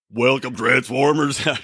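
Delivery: acted throaty, rough voice. Opening the show, the host attempts an Optimus Prime voice. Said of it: "do the Optimus Prime voice".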